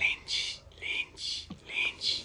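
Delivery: creepy, small, sinister breathy whisper. Recapping a scene where Hannibal sneaks up, doing the creepy little Hannibal voice. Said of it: "We hear a creepy little voice".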